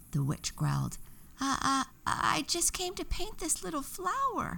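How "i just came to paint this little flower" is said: fearful stammer, much higher pitch. Narrator reading Daffodilia's reply to the witch, Daffodilia stammering in fear. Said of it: "Daffodilia stammered in fear".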